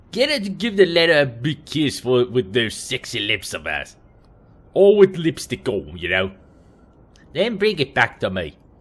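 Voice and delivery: put-on wobbly sing-song Kiwi accent sliding toward Australian. Voicing one character in an acted scene, wobbly kiwi or australian accent. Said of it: "My Kiwi accent or Australian accent is going all over the place".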